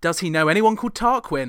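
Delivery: ordinary talk, nothing marked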